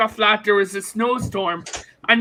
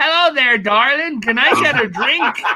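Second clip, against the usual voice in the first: terrible, laid-on-thick put-on American accent; 2 semitones higher than usual. Retelling an episode where Angela Lansbury goes over to the bar, worst fake American accent. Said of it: "putting on the worst American accent ever".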